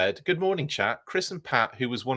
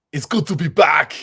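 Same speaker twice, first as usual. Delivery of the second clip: very loud, slow, booming put-on voice; 4 semitones higher, 8 dB louder than usual. Doing a viewer's requested line in an Arnold Schwarzenegger voice. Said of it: "I'll do it for you".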